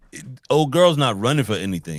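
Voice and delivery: ordinary talk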